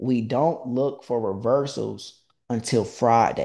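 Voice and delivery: slow, measured, deliberate, word-by-word delivery. Repeating a trading rule a second time for the audience: said slowly. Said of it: "I'm gonna say it slowly".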